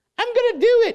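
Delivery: put-on British accent with a very high pitch. Retelling Elaine's reply to being called to do something, in Elaine's British accent. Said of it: "she says it with that great British accent".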